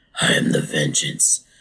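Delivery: hushed, dark, breathy caped-hero whisper. Moving the show's discussion on to the Batman; doing a Batman voice. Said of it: "I can't do a Batman voice".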